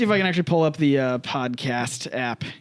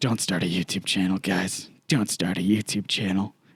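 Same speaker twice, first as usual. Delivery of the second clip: mock gloomy tone, lower; 7 semitones lower than usual. Retelling what Drake said about starting channels, imitating Drake being pessimistic. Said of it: "Drake was super pessimistic about".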